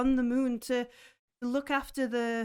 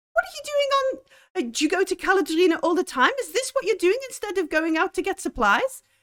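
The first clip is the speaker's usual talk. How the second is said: loud, high, cross scolding shout; 6 semitones higher, 6 dB louder than usual. Voicing an old lady who calls someone back: character shouting crossly. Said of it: "She shouts to him".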